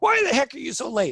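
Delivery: very high, demanding, blaming, annoyed tone. Showing how not to ask someone about being late: accusing, annoyed question. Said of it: "Not accusatorial. ... Not like that".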